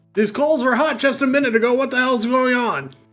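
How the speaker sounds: high, loud hollered yell. A voice from the back of the shop calls out: a loud yell. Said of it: "a loud voice from from the back just yell".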